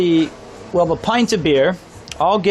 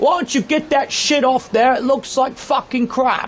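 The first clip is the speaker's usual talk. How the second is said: high, gruff, far-off yelling. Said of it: "he immediately turned back and goes".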